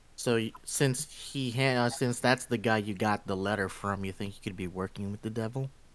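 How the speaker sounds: quiet, breathy half-whisper. In a tabletop game scene, a player character speaks to the party, half-whispering. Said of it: "I'm I'm whispering this".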